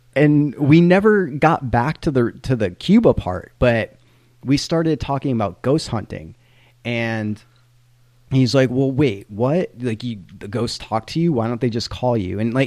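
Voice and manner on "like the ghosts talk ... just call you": usual speaking voice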